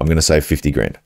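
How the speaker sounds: ordinary talk, nothing marked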